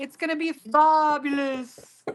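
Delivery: fake, silly, goofy put-on English accent. While clearing things out of the way, a speaker talks in a put-on English accent. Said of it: "I love your English accent".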